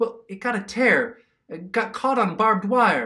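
desperate, cornered, high-pitched delivery. Asked sharply whether anything is the matter, he explains, desperate. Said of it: "Ken was desperate".

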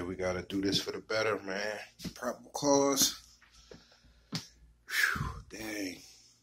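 slow, held-back voice, fighting back tears. Packing up a box of extras to ship out, holding back emotion. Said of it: "I'm trying not to get emotional".

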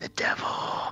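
hushed whisper full of dread.

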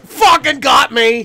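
loud drawn-out yell.

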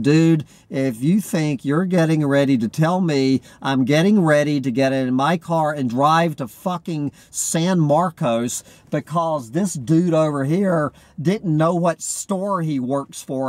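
ordinary delivery

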